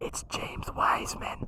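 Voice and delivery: very quiet, soft, hushed whisper. Revealing an answer by whispering it into the mic, whispered. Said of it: "I'm going to whisper it into the mic".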